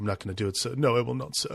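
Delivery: subdued, quiet, soft-spoken delivery. Retelling the same scene as the man protests: imitating a character speaking quietly. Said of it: "quietly saying".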